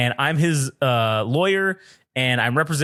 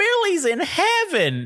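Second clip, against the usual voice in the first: put-on very high, shrill, swooping old-lady yell. Retelling a prank call where an old lady yelled back: imitating an old lady yelling. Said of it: "this fucking lady just yells at me as loud as she, her old lady voice can".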